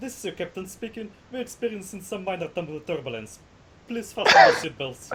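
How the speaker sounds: fast pilot-style intercom announcement through giggles. Voicing a character speaking as captain over the helicopter speakers: giggling captain's announcement. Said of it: "Kitsun's going to giggle and".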